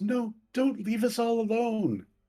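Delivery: frantic, very high-pitched panicked shout. As a player starts to leave the room, the narrator voices the ghost of Thorn, panicking and shouting. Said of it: "the ghost of Thorn starts to panic and shouts".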